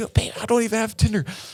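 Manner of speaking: very high, hissed whisper-yell. Retelling a couple's fight on a plane: imitating someone whisper-yelling. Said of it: "whisper yelling".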